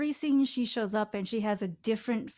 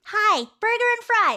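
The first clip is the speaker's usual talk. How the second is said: put-on very high, raised voice like a ten-year-old; 11 semitones higher, 8 dB louder than usual. Recalling ordering a burger and fries, the speaker's voice pitches up like a ten-year-old. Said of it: "my voice like just pitches up until I sound like I'm ten".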